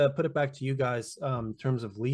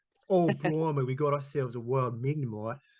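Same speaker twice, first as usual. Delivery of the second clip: put-on, lively Australian accent. Picturing a wildlife host finding a Pokemon: Steve Irwin impression. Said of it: "That's a really good Australian accent".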